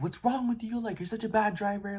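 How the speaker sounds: mock very high-pitched, shrill scolding yell. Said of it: "nobody really yelled at me".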